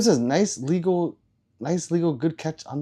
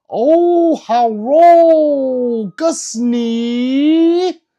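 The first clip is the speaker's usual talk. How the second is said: very loud, high put-on Chinese accent, "hello" stretched; 9 semitones higher, 11 dB louder than usual. Quoting what someone says to him, imitating a Chinese accent. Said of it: "That's how Chinese people talk".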